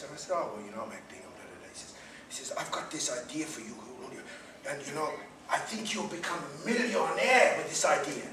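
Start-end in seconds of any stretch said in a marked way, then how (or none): 2.6-8.3 attempted, put-on Spanish accent. Julian retelling what a man named Ernesto told him, Spanish accent. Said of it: "I can't do a Spanish um, accent, but I'll attempt it for you".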